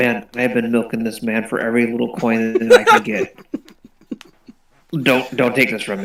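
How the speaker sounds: low, close, secretive half-whisper. Pulling another player's character aside during the game, the speaker half-whispers in their ear. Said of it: "I whisper, in your ear".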